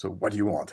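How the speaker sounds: mock severe, stern, firm, no-nonsense tone. Retelling what a figure said in an altered state: imitating a stern, loud voice. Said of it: "And quite s-, like, stern".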